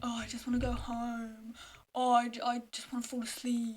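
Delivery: mock-glum, downcast voice. Speaker acting out how everyone sounded in the morning, imitating everyone being down. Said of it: "they would always be so down".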